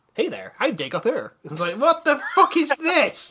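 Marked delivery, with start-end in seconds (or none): 0.2-1.3 warm, friendly American male voice. Speaker mocks a disappointing game villain, doing Dagoth Ur as friendly American. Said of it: "talks like a friendly American man".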